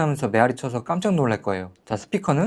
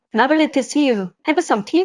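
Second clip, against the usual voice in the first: British female voice, higher pitch; 12 semitones higher, 3 dB louder than usual. Trying out a voice changer preset: British woman's accent. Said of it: "영국 여자?".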